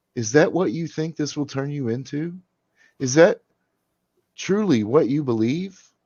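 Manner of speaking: startled voice. Narrator voicing the old man's reply to her, in a startled voice. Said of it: "The old man's voice became startled".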